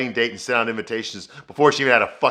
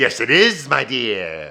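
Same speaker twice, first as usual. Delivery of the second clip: wicked, evil stepmom voice, drawn-out "dear". Retelling a scene, a woman answering Charlotte in an evil stepmom voice. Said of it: "evil stepmom voice".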